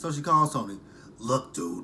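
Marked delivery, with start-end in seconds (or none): 1.2-1.8 loud, furious, angry smoker's voice. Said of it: "I hate doing Angela's voice".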